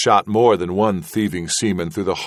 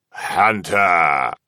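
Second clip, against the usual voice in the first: put-on thick, drunken, croaking voice. Hunched over his grog in a corner, Levasseur calls to Hunter, Levasseur's thick, drunken croak. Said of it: "Levasseur croaked in a thick, drunken voice".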